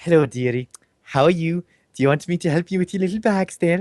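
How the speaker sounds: put-on camp voice. Speaker recounts having fun with a voice they put on; camp voice. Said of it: "I actually put a camp voice on".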